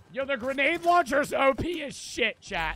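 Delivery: very loud, high voice breaking and cracking. Streamer talking to chat during a game, voice cracking. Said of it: "I just had a voice crack there".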